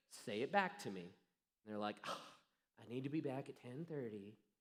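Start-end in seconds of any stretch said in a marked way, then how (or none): 2.0-4.3 acted teenage girl voice. Acting out a kid repeating a curfew back, teenage girl impersonation. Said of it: "That's my teenage girl impersonation right there".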